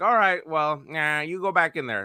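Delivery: high-pitched cartoon cop character voice. Voicing a cop waving a bank robber back in, Chief Wiggum voice. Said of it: "That's my Chief Wiggums impression".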